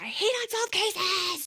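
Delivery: very high, shrill, furious shrieking fit. Retelling someone throwing a fit and stomping out: imitating a scream. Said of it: "throws, like, a literal fit and screams".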